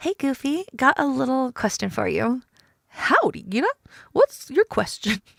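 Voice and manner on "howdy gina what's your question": hammed-up delivery with swinging pitch. Reading dialogue aloud, greeting the player who has a question, in a Goofy voice. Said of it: "My goofy voice".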